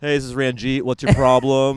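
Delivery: loud, put-on Indian call-centre voice.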